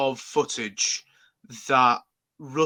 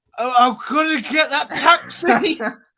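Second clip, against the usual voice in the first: acted drunk, much higher, louder, slower; 13 semitones higher, 8 dB louder than usual. Describing the Doctor on a night out in London, imitating the drunk Doctor. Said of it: "the Doctor is shit-faced drunk".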